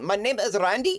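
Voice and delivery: heaviest put-on Indian accent, laid on thick. Retelling a phone call where the man gives his name: heavy indian accent impression. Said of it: "the heaviest fuck Indian accent".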